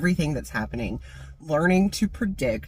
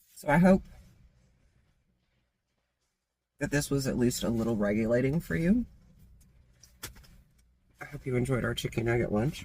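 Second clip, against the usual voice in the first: talking with mouth full; 3 semitones lower than usual. Wrapping up over a chicken nugget lunch, the speaker signs off: talking with mouth full. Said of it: "I'm talking with my mouth full".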